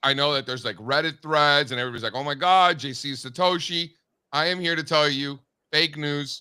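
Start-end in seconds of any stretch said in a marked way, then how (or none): none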